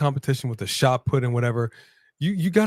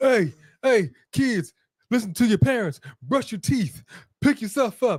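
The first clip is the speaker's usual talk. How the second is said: pitched-up, high, mocking lecturing tone; 8 semitones higher than usual. Retelling a speech given with a son in the ring: mocking imitation of Jay. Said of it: "Brought his son out there talking about".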